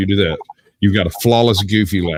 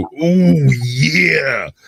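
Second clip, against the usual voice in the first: pitched-up pro-wrestler-style high "ooh" call; 6 semitones higher than usual. Showing how the Macho Man Randy Savage bit ends: Macho Man Randy Savage voice. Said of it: "after the Macho Man Randy Savage bit".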